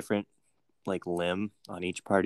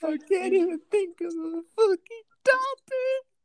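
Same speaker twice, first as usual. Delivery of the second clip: very high, loud mock sobbing voice. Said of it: "Cry a little more".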